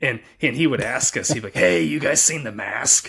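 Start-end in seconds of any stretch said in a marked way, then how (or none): 1.5-3.1 gravel-throated, gravelly guy voice. Recalling a guy who kept asking the same question, imitating a gravelly voice. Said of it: "He had this gravelly voice".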